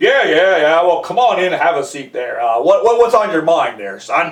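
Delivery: gruff voice dropped to very low pitch. Retelling a visit, the speaker voices Mister Green answering Jeff: Mister Green's gruff voice. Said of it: "Mister Green seemed to have this gruff voice".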